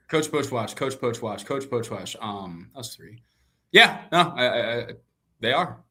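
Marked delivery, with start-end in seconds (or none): 0.1-2.1 fast tongue twister, quieter. Trying to say a tricky name five times in a row, tongue twister said fast. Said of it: "Say that five times fast".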